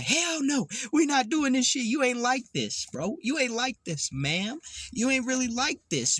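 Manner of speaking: high, aggressive, right up close, confrontational tone. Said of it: "jump up in your face and be like".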